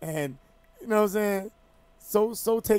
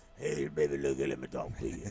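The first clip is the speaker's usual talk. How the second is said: very low, raspy smoker's voice; 9 dB quieter than usual. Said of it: "sounded like [name]".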